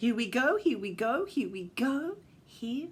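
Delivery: ordinary delivery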